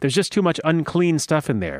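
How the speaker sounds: ordinary talk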